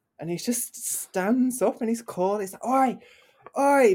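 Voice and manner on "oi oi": very loud, high shout, bellowed as over a PA. Retelling a man standing up at a punk festival, retelling a shout over pa. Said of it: "just like shouting over the PA".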